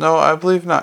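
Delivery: ordinary delivery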